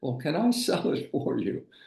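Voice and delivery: voice cracking, cracked and high-pitched. Retelling how you built up courage to ask the homeowner, imitating a cracked voice. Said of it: "with a cracked voice said".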